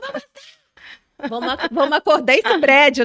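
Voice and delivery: full-throated, loud, high-pitched rallying yell. Contrasting speaking softly in the ear with shouting, a speaker demonstrates: shouting. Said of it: "do que você gritar".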